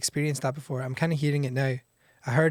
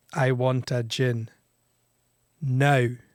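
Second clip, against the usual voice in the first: angry, very slow, drawn-out delivery. Showing how the title should be said: angry demand. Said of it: "you have to say it in an angry".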